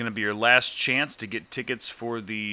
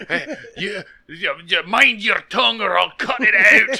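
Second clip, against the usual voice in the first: very loud, very high put-on Scottish accent, Russian-tinged; 10 semitones higher, 9 dB louder than usual. Playing a Russian on a mountain in a bit: Russian with Scottish accent. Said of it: "a bunch of Russians with Scottish accents".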